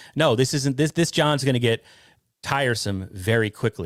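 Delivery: ordinary delivery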